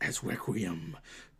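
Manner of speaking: deep voice. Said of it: "Sorry, my voice got deep".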